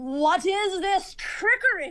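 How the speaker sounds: high hollering. Voicing an unseen figure upstairs who yells at a trick: yelling in character. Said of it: "you hear a yell".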